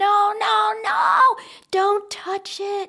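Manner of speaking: loud, very high, very slow, drawn-out mock child's scream. Telling about a boy scared by blood, imitating a child screaming in fear. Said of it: "he starts screaming".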